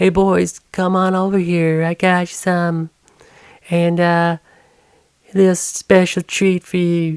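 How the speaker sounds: so-so imitated Southern drawl, slow and high. Retelling a woman calling the boys over: imitated Southern accent. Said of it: "She has like a southern accent. I don't know if that's a good one".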